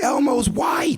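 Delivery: put-on very high, loud, shrieking child's yell. Retelling how a kid at the party exposed the costume: imitating a kid screaming. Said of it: "lifts the sleeve up of the thing and screams".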